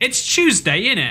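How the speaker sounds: fake British accent. Repeating a phrase jokingly: fake British accent. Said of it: "in that fake British accent".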